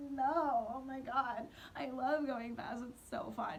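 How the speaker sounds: slow, forced fake excitement masking fear. Retelling a fast car ride with a man, retelling fake enthusiasm. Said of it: "Meanwhile, I'm like crying".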